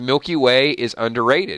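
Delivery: plain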